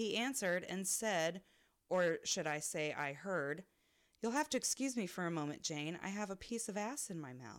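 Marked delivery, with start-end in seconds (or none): 4.2-7.6 put-on courteous, polite Southern gentleman accent. Reading a story, quoting a polite customer from Kentucky: polite Southern manner. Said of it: "in a very polite and Southern manner".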